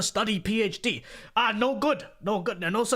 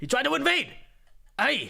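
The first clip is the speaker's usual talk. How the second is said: higher-pitched, creaky, raspy character voice; 5 semitones higher than usual. Reading out a viewer's paid message in a Mister Miyagi voice. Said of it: "now we're doing Mister Miyagi".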